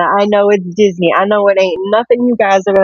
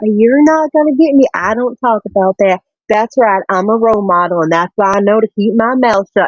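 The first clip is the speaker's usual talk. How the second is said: put-on sweet, little southern accent. Acting out a celebrity answering people who try to get her political, in a put-on sweet little southern accent. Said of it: "in her sweet little southern accent".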